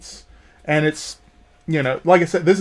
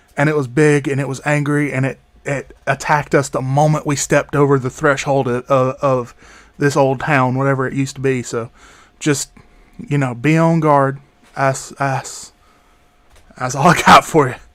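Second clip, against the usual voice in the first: whispering in a put-on character voice; 2 semitones lower than usual. Voicing a character warning the group about a past attack: whispering in character. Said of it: "he's whispering".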